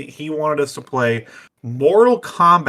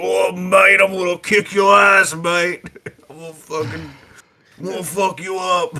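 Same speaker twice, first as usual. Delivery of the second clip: put-on Australian accent, pitched slightly higher; 5 semitones higher than usual. Describing a game character who is Australian: imitating Kano, Australian accent. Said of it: "He's, like, an Australian. He's like".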